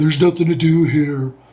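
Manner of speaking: put-on dumb teenager voice, griping. Quoting a daughter's typical teenage answer in a dumb teenager voice. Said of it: "my dumb teenager voice".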